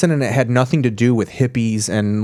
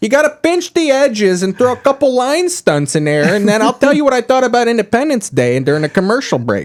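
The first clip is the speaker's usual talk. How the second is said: very high-pitched, put-on Chicago accent; 12 semitones higher, 4 dB louder than usual. Talking about what's great about the chicago accent, demonstrating it: put-on chicago accent. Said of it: "here's what's great about the Chicago accent".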